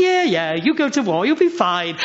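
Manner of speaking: high, mocking, dripping with sarcasm.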